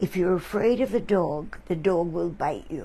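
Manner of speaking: plain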